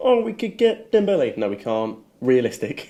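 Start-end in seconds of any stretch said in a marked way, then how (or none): 0.0-1.4 very high, squeaky mocking voice. Mocking fans who suggest unrealistic signings: mocking squeaky voice. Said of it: "who's that character with the squeaky voice?".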